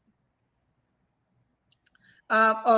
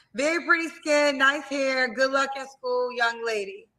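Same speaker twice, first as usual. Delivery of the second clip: plain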